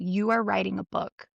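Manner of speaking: put-on angry, insistent voice. Retelling how a psychic got mad when not listened to: imitating an angry psychic. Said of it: "angry 'cause I wasn't listening".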